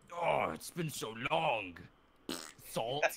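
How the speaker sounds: loud, drawn-out, screechy demonic devil voice. Voicing the weakened devil for the players: screeching devil voice. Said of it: "time to screech into my mic".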